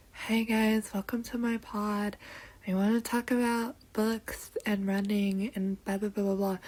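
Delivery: soft, low-energy, low-key podcast host voice. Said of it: "I don't know why I have so much energy right now".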